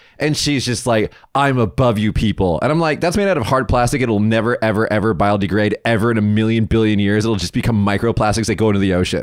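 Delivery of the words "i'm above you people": put-on arrogance, condescending, slower. Speaker retells a woman pulling out reusable chopsticks, mock-arrogant, condescending. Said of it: "arrogantly and just condescendingly".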